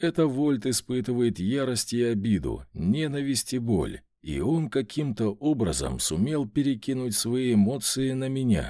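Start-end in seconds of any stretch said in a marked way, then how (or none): none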